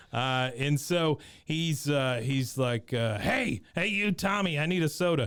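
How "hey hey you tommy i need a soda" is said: called out loud, pitched up. Retelling a scene, imitating Wichard yelling across the track: imitating Wichard yelling. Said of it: "Now he is yelling at Bobby".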